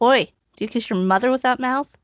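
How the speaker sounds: loud, high, jeering, mocking tone. A player in a tabletop game calls out to a bony creature: mocking taunt. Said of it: "I'm going to mock him".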